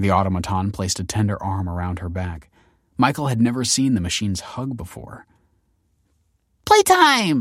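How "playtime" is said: very high, loud, delighted cheering call. Narrator reads a character's line as she jumps up and down, cheering. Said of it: "Taylor cheered".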